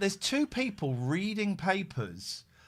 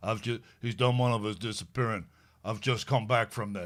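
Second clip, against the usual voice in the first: put-on American accent; 5 semitones lower than usual. Imitating an actor's line from the show: imitating an American accent.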